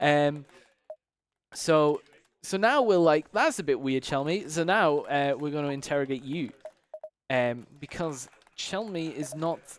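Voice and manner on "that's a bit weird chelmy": ordinary talk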